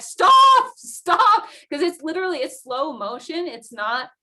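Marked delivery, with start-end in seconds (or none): 0.0-1.4 desperate, very loud and high urgent yell. Recounting yelling at him as he tumbled in the avalanche: retelling urgent yelling. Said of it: "and I'm like yelling at him".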